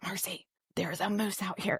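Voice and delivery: put-on whisper. Retelling an early-morning moose sighting near the porch, imitating Eric whispering. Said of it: "And he's whispering".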